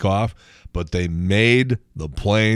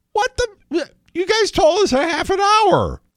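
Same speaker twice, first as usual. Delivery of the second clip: voice shooting up, very high-pitched cry of disbelief. Retelling confronting gate staff after the plane left, voice going really high. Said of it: "my voice went really high like that too".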